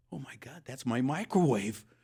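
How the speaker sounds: choked-up, emotional voice catching with feeling. Retelling a lady's reaction on seeing her microwave: choked up. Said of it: "you're getting choked up".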